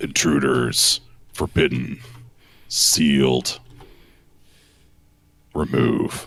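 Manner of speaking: low, grunting stone-statue voice pushing out words. Narrating a lurching figure that speaks to the players, the speaker grunts it out. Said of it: "it grunts out".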